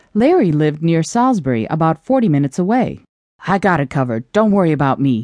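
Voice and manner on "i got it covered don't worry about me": gruff, brusque, much lower. A man at his desk answers why he is there; gruff. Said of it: "he said gruffly".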